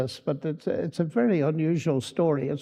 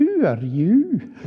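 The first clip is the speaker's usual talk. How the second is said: put-on loud, charming, delightful Scottish accent; 4 semitones higher, 5 dB louder than usual. Retelling how a phone call was answered: delightful scottish voice. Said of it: "a very delightful Scottish voice answered".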